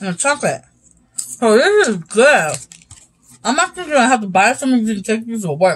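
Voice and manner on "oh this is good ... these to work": muffled speech with mouth full of food. Someone tasting a chocolate peanut butter candy, talking with mouth full. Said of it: "I'm talking with my mouth full".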